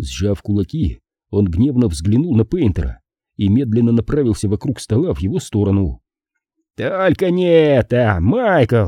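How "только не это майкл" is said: exclaiming very slowly, high pitch, words stretched out. A man rising and stepping between two opponents, calling out to one: exclaimed. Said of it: "воскликнул Уилл Джентри".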